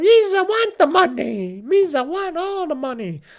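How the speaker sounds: very high, squeaky, slow, goofy creature voice. Joking about Nintendo, the speaker voices the company's attitude: Jar Jar Binks voice. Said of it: "I sounded like Jar Jar Binks there".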